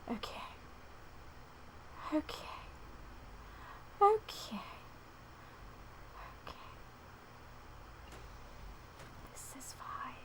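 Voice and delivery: whispered under the breath, hushed and breathy. While playing a video game, whispering. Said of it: "I don't know why I'm whispering".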